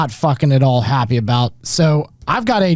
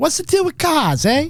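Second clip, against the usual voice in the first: bad put-on Boston accent, very high; 12 semitones higher than usual. Opening the episode with a bad joke, in a bad Boston-guy accent. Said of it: "Like a Boston guy".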